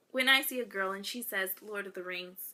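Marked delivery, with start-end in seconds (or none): none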